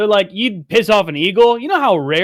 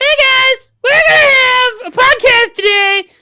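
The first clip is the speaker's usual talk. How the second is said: squeaky, very high, raised voice; 6 dB louder than usual. Teasing a fellow podcaster about how he really sounds: Rumpelstiltskin voice. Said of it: "Sounds like Rumpelstiltskin".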